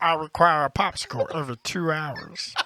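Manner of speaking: cartoon voice, pitched high and slow. Asked to do a cartoon voice again after years: Meatwad voice. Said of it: "Can you still do the voice?".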